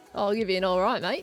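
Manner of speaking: exaggerated put-on strong Australian accent. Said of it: "Could be real Australian if you want".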